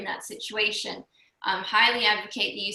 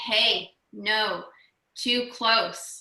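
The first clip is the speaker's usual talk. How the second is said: deep, firm, steady voice, very slow. Showing people how to speak to an approaching bear: deep, firm voice. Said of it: "use a deep, firm voice, and you say".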